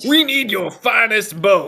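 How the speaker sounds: yelling very loudly. Heading in to get a bow, the player character is screaming out loud. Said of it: "I scream out loud".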